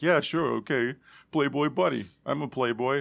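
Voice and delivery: mock slurred drunk voice. Retelling what a drunk tattoo artist said: imitating a drunk person. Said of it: "he was drunk and he was like".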